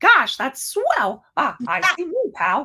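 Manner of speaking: animated, high, swooping cartoon mouse voice. A streamer spotting a Mickey emoji in chat, doing Mickey Mouse voice. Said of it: "What would Mickey say?".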